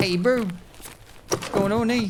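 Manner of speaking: put-on New Zealand accent. Speaker demonstrates the accent they use, in a Kiwi accent. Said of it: "when I use that accent".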